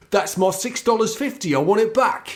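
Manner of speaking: put-on London Cockney accent. Doing a bit for the other speaker, in a cockney accent. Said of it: "I do like your Cockney accent".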